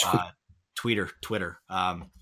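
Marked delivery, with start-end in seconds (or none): none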